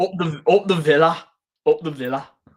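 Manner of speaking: put-on Birmingham accent. Trying to do a Birmingham accent while watching football: attempted Birmingham accent. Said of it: "I'm trying to do the Birmingham accent".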